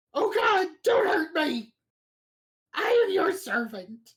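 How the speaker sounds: very high, loud, grovelling, cowering kobold voice. Narrator voices a startled kobold that drops to the floor, kobold creature voice. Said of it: "he drops to the floor and says".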